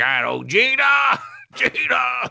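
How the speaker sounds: play-acted very high, very slow yell. Recapping a movie scene, Bloodshot yelling Gina. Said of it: "He yells Gina a lot".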